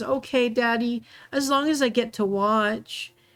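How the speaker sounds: high-pitched words choked out through sobs. A girl answers her father in the story, speaking through sobs. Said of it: "out of sobs".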